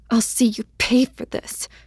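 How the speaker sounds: hissing, breath pushed through. A narrator reads a character's line as she rears up, hissing. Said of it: "she hissed out".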